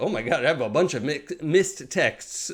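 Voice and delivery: plain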